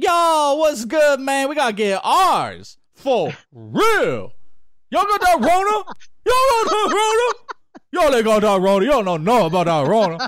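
very high-pitched voice with heavy slangy street talk. Imitating a player walking back in: imitating Blake talking slang. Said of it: "walks back in".

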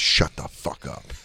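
low, slow, whispered put-down. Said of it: "that guy was like".

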